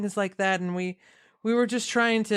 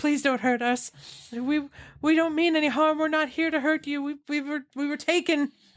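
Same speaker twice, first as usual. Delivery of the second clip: terrified pleading tone, much higher; 6 semitones higher than usual. Game characters plead with the players and their elephant friend, terrified pleading.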